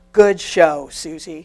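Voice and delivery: loud, resonant Southern voice. Accepting an award in his honor, recalling his words: big booming Southern Baptist voice. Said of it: "in that big, booming Southern Baptist voice".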